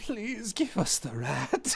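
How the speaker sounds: put-on very high, crumpled old Eastern European baba voice. Picturing who would say a line, voicing an old Eastern European lady. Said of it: "an Eastern European baba, like, like, an old lady crumpled up".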